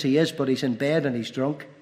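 ordinary talk, nothing marked

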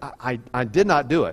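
usual speaking voice

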